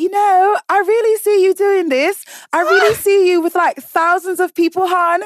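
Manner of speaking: put-on British accent, very high-pitched and loud. Retelling what a cousin said while watching the DJ set: Vanessa impression, British accent. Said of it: "Your British accent is so spot on".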